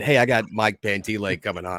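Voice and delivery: ordinary delivery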